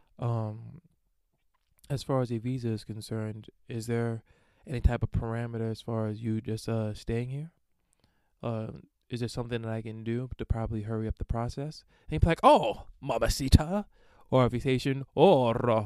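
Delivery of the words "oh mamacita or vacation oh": terrible put-on Haitian accent, loud and slow. Acting out what they would say in reply, in a terrible Haitian accent. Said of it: "I have a terrible Haitian accent".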